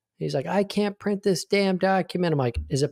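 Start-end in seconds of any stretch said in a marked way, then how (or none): 0.5-2.3 high-pitched, half-yelling, complaining tone. Recounting a guy who called him screaming, imitating someone screaming. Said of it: "This guy just calls screaming at me".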